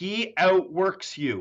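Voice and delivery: emphatic stress on OUTWORKS, slow and drawn out.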